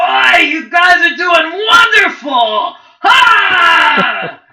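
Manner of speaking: very high, very loud scream-out. A player character calls out to the innkeep; Fen screaming out. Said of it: "[name] the barkeep does some sort of incantation or something. / and then he pulls out a vial out of his jacket pocket or his coat pocket".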